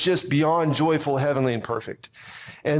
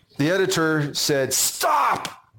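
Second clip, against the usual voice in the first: ordinary delivery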